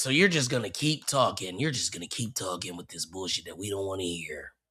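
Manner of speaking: mock annoyed, exasperated, fed-up griping. Retelling what Adam said while annoyed: imitating Adam, annoyed. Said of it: "Adam is so annoyed".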